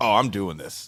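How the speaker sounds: usual speaking voice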